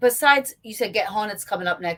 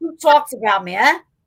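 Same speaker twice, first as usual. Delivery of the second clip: loud, put-on South Philly Jersey accent; 3 semitones higher, 7 dB louder than usual. Mocking an accent that just slipped out, south philly jersey accent. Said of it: "That sounded like a like a South Philly".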